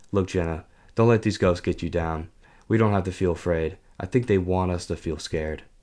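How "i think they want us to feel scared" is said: ordinary delivery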